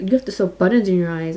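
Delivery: ordinary talk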